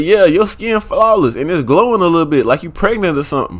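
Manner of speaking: ordinary talk, nothing marked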